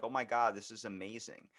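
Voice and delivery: ordinary talk, nothing marked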